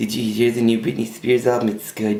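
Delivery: put-on vapid, chatty, airheaded girl voice. Retelling what a girl said in the car: imitating Tanya. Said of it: "she talked just like that".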